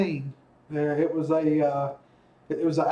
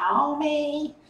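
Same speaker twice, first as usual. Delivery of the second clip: very high cartoon voice, word drawn out long; 11 semitones higher than usual. Trying an impression of Marge Simpson for a laugh: Marge Simpson voice. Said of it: "can I do an impression of Marge Simpson".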